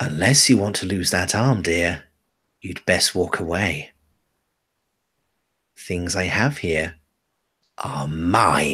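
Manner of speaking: low hissing voice, "mine" drawn out. A game master voices a stallholder warning a customer off her goods, hissing. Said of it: "She hisses".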